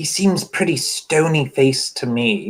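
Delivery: loud stage whisper. Speaking in character to the others about someone: loud whisper. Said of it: "He'll kind of loud whisper to the others".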